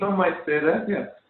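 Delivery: amused light laugh. Narrator voicing a woman turning to lead the guests through, with a slight laugh. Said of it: "turns around with a slight laugh and says".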